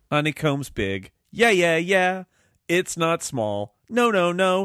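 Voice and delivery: wildly overdone, hammy, swooping emoting. Demonstrating too much emoting while discussing character voices, over-the-top emoting. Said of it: "too much emoting".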